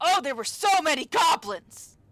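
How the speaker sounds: shrill, booming, very loud, high boastful yell. Narrating the scene, the speaker voices a character calling out: loud boastful yell. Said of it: "a loud, boastful voice yelling out".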